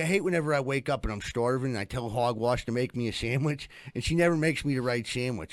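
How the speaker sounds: normal talking voice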